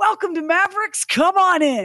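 mock bellowed chorus, loud and very high. Retelling how store employees greet customers: imitating employees shouting a greeting. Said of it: "says in unison, as loud as possible".

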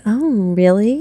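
teasing, playful, flirtatious delivery. Showing how a partner might ask about the day: playful, flirtatious tone. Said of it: "very playful, flirtatious".

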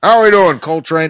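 loud, gruff movie-star voice. Among the group, the speaker tries out a Gene Hackman impression. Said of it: "Gene Hackman is the hardest impression".

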